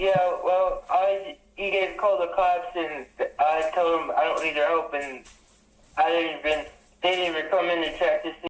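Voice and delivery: stammering, stuttering, broken-up speech. Telling crisis services the police didn't come in to check: stuttering. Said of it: "I love how he's, uh, stuttering".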